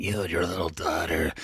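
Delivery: very low, forced, goofy, menacing villain voice. Mocking the killer's phone voice from a trailer: imitating the goofy killer voice. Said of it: "it's just so goofy at this point".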